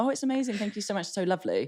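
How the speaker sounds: courteous, polite, pleasant stock delivery. Retelling own answer when asked about the day: imitating own polite reply. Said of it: "I'm polite".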